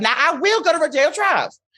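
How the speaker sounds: put-on Southern accent. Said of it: "with my Southern accent".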